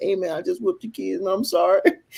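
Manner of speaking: put-on crying, high, tearful and weepy. Retelling a phone call apologizing to a brother: imitating own past crying.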